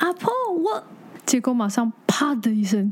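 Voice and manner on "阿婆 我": very high, loud, eager yell. Recalling running to find their grandmother as a child: retelling a shout. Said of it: "我就大喊".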